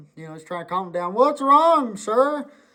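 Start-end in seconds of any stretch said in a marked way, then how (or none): 1.1-2.5 put-on very high, anxious, worried voice. Retelling the sheriff trying to calm a man down, mock-nervous sheriff. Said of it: "Kind of nervous".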